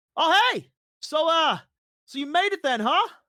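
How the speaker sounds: very loud, high shout carried from a distance. The storyteller voices Kellum calling to the group from a distance, Kellum shouting over. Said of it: "as he's like shouting over".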